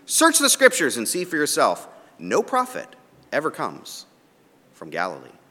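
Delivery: high-pitched, loud, sarcastic, condescending tone. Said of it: "sarcastically again, condescendingly".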